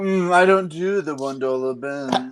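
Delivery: slow, elitist, snooty, snobby voice. Mocking another speaker's record taste with a monocle gesture: snobby monocle voice. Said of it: "you go into the same voice every time".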